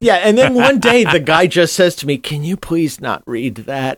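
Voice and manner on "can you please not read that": put-on, intensely pitiful, pathetic begging voice. Retelling the guy asking not to have his title read: imitating a pathetic plea. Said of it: "the patheticness in his voice was so intense".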